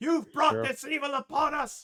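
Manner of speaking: shrill, very loud, high, all-out furious scream. Voicing a shopkeeper pushing through guards: angry shouting. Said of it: "he is screaming and shouting at the group".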